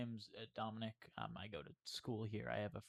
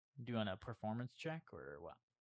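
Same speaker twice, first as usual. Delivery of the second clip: ordinary delivery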